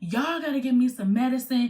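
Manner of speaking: mock pain-wracked, desperate, tearful voice, through tears. Retelling asking hospital staff for medicine in pain: imitating own screaming plea. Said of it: "I'm screaming, I'm crying".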